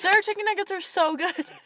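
sudden, loud, high-pitched yell. Disagreeing with the other speaker about Burger King nuggets: yelling. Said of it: "I just yelled".

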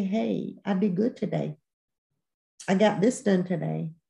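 ordinary delivery

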